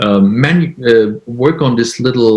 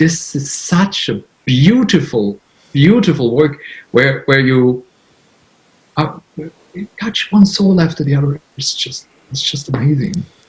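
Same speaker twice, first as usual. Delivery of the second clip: voice welling with emotion, choking up, almost crying; 3 semitones higher than usual. Describing their work helping people, the speaker almost cries: almost crying. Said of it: "I almost started to cry".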